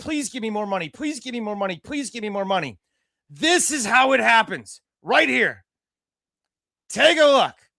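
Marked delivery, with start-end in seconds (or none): 0.0-2.8 begging plea, same words repeated three times. Mocking schools asking fans for money: imitating someone begging. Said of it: "Why are they begging boosters?".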